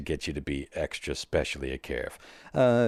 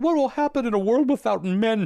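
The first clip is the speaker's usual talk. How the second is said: put-on whiny voice, higher and louder; 6 dB louder than usual. Retelling a video of Jordan Peterson: imitating Jordan Peterson whining. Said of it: "that whiny video where he's like".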